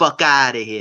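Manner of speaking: put-on New York accent. Retelling what a man said, in his best New York accent. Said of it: "in like my in my best New York voice".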